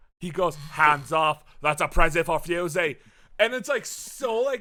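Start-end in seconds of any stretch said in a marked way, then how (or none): 0.5-2.8 put-on loud, hard, heavy Australian accent. Quoting a game character claiming an item: Fuse voice, hard generic Australian accent. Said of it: "hard, generic Australian Aussie accent".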